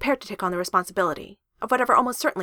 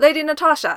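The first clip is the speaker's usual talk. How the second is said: huge, resounding, very loud, high booming shout; 9 semitones higher, 9 dB louder than usual. Reading a character's line as he crashes into an apartment, in a booming voice. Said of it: "Thor boomed".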